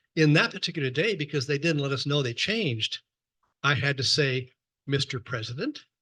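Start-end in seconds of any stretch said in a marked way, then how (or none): 4.8-5.8 checking, questioning intonation. Retelling answering the president's phone call, imitating own questioning tone. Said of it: "in a questioning tone to make sure".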